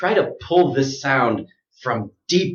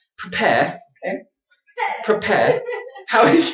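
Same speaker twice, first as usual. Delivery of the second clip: put-on swooping British accent, very high; 10 semitones higher than usual. Showing listeners the difference between accents, joking around: put-on British accent. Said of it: "This is my British accent".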